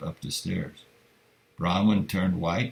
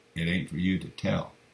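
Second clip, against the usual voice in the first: ordinary delivery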